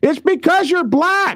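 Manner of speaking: put-on very high, shrill child's screech. Retelling how a kid of six or seven screamed out: imitating a child screaming. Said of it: "he screams out".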